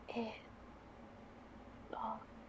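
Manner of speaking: barely voiced, soft, breathy whisper. Narrating a story, a character feels the hair and whispers. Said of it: "she just whispers".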